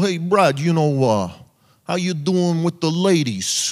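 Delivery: put-on slow, unhurried New York accent. Speaker recalls his uncle's advice when he was eight: Uncle Lou's New York accent. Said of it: "in like a New York accent".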